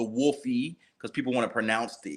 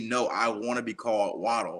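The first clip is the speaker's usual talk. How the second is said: plain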